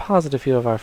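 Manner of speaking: plain reading voice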